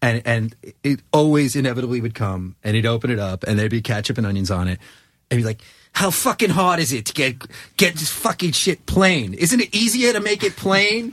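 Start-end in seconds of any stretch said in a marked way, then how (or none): 5.9-11.1 put-on worked-up, exasperated rant, very high-pitched. Retelling a man's reaction to his food order, imitating an angry rant. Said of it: "he gets so bent out of shape".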